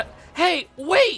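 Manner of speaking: cracking voice. Voicing a character calling after someone who is leaving: voice cracking. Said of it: "Sorry for the voice cracks there".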